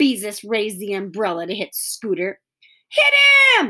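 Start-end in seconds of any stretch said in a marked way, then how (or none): 2.9-3.7 shrill, piercing, high, loud yelling voice. In a children's story, Mary Jane urges Beezus against Scooter: yelling. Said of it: "yelled Mary Jane".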